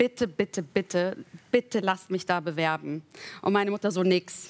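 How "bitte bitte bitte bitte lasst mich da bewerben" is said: ordinary delivery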